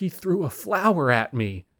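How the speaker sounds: put-on, somewhat whiny, slow, swooping, drawn out. Recounting a stage moment that made the whole theater laugh, in a mock-whiny tone. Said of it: "in a somewhat whiny tone".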